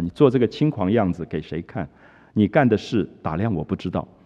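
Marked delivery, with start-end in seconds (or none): none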